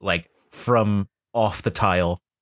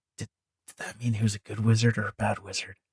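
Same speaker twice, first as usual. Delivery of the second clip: hushed, obvious stage whisper; 3 semitones higher, 5 dB quieter than usual. A player voicing Max, sidling over to Zan, in an obvious stage whisper. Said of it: "but being very obviously whisper".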